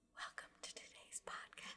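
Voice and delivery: whispered, soft, breathy ASMR murmur. Opening a podcast episode, a host does a mock ASMR voice. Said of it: "Stop it with the A S M R shit".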